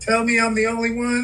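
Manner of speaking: ordinary talk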